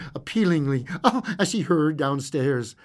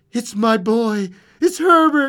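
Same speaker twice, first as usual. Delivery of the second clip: loud, rising crying out; 8 semitones higher, 7 dB louder than usual. Narrator reading a wife struggling against her husband's grip; crying out. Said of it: "she cried".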